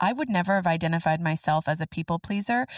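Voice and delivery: plain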